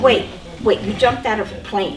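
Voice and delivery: ordinary talk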